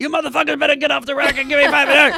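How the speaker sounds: very loud, very high, shrill drill-instructor yell. Narrating a book, reading a line as the drill instructor. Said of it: "read a line as the drill instructor".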